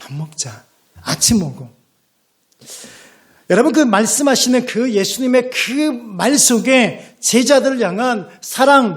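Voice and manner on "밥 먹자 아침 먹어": put-on tender, affectionate tone, much lower pitch. A preacher retells words spoken to weary, despairing disciples, acting out tender, affectionate words. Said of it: "다정다감하게 말씀하시는 거예요".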